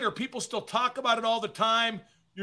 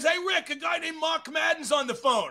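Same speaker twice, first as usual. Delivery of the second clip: light, pitched-up calling out; 6 semitones higher than usual. Speaker recounts a phone call, acting out the man who answered: retelling a yell. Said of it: "he yells out".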